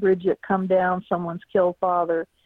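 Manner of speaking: normal talking voice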